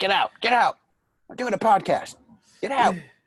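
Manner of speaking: very high, furious, angry shouting. Retelling what Bill yelled at someone during the podcast, imitating Bill yelling. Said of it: "Bill's yelling at someone".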